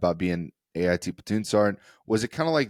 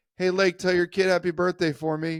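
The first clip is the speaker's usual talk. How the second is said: mock shrill drill-sergeant holler, pitched way up; 11 semitones higher than usual. Speaker retells a drill sergeant yelling to him as he walks: retelling a yell. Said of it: "another drill sergeant yells at me".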